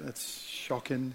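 hushed, whispered, put-on English accent. Reacting to hearing the year someone was born, in a best English accent. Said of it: "that's my best English accent".

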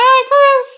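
shrill, squeaky mouse voice, very high and loud. Retelling how Dad threw his voice to Mom, in a big squeaky mouse voice. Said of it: "a big squeaky, like, mouse voice".

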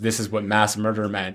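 usual speaking voice

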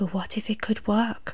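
whispering. Narrator reads a woman's own brain talking to her as she tries to sleep: whispered. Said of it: "her brain whispered".

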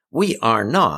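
huffy, affronted, indignant and offended tone. Em answers John's accusation, indignant. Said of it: "Em said indignantly".

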